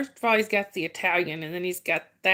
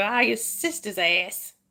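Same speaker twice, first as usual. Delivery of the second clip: slow, fed-up, exasperated outburst; 2 semitones higher than usual. Retelling what a friend says when frustrated: imitating a friend getting frustrated. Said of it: "he'll get frustrated with something. He'll go".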